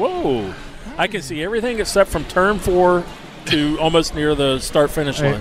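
ordinary talk, nothing marked

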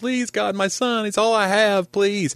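put-on desperate weeping, very high, tearful crying. Telling a joke about a mother crying out to god: imitating a crying plea. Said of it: "She's crying out to God".

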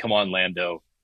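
ordinary talk, nothing marked

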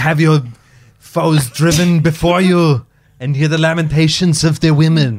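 very slow, high-pitched, every word drawn out. Quoting a favorite film to friends: Conan impression. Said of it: "I don't know why I'm doing so many impressions".

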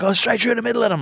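mock, very high, screamed shouting. Retelling coaching a child during a game: imitating own past screaming. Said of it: "I'm screaming there".

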